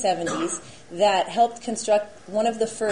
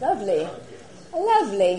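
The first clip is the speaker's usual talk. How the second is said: terrible put-on British accent, swooping and sing-song. Presenting on a tradition, the speaker comments in a terrible Bert-style British accent. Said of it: "practicing my terrible British accent".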